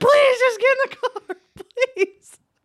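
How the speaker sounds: play-acted, very high, loud, frantic pleading scream. Retelling a fight, her friend begging them to get in the car: retelling her friend screaming. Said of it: "fucking screaming her head off".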